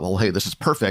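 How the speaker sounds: ordinary talk, nothing marked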